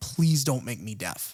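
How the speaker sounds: put-on pleading, begging tone. Retelling a scene where a boy begs his mother: imitating someone begging. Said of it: "begging his, his mother".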